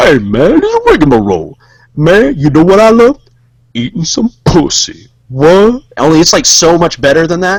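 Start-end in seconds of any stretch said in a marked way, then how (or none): 0.0-5.8 put-on swooping character voice. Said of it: "to do that voice ... It's just basically like".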